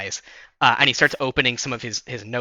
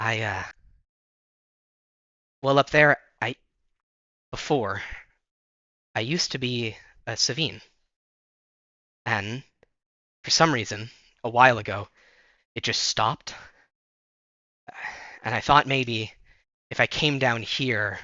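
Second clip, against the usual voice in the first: whispered speech. Narrator voices a character speaking to the player after coughing: whisper. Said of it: "and in a whisper".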